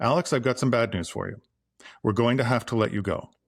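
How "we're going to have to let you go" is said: downward, falling pitch at the end on go. Example of telling Alex bad news: falling pitch at sentence end. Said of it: "Always end your sentences with a down inflection".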